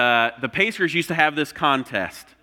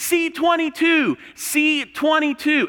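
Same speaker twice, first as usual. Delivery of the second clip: acted scream, much higher; 13 semitones higher than usual. Retelling standing up in the last row and screaming, re-enacting shouting. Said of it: "I'm screaming".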